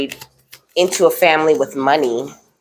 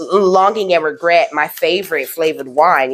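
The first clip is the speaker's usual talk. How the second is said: usual speaking voice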